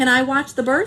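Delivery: plain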